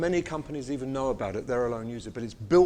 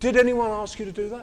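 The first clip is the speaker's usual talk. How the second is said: put-on loud aggressive whisper, higher; 9 semitones higher, 6 dB louder than usual. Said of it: "he's whispering na-, loud, aggressive whispers".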